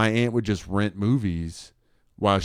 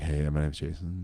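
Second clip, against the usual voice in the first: put-on smooth radio-host voice, lower and quieter; 5 semitones lower, 7 dB quieter than usual. Teasing a co-host about how he sounds, smooth jazz radio host voice. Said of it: "sound like you're on a jazz radio show".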